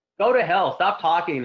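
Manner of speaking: mock frustrated outburst. Describing how you would speak back in your own voice, retelling a frustrated outburst. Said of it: "you're so frustrated".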